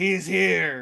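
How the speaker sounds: acted-out, flat, utterly unenthusiastic announcer-like delivery. Retelling a film scene where the lackey announces the leader: imitating an unenthusiastic voice. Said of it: "in the most unenthusiastic voice".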